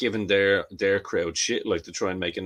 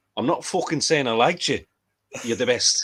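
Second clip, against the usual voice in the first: imitated Mancunian accent; 4 semitones higher than usual. Quoting a man from a touring group, in his manchester accent. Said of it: "in his Manchester accent".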